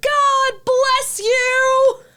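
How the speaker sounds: put-on very high, loud holler, "you" drawn out. Retelling an encounter at the fair, retelling Kim Reynolds shouting. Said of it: "shouts behind her".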